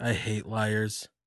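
soft, utterly calm, unruffled voice. Retelling a wrestler's line after a match: imitating a very calm line. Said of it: "Just so calm".

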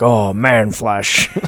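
fantasy monster voice, like an orc. Joking about an orc's diet during Mass, the speaker does an orc voice. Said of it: "the orc going like".

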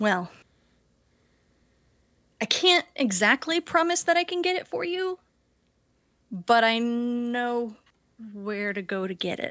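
put-on nervous, antsy, fidgety voice. Voicing a character shifting weight, looking antsy: nervous antsy character voice. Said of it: "look, uh, antsy and, um, nervous".

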